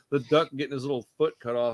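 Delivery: ordinary talk, nothing marked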